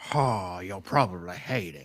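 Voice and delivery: voice dropped very low. Quoting a line another speaker just said: Nicolas Cage impression. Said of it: "Was that Nick Cage?".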